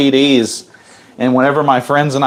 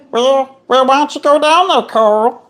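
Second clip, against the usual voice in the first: very high-pitched cartoon voice; 13 semitones higher than usual. Trying out a cartoon voice for the others: Meatwad voice. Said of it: "We're gonna try my best meat wad".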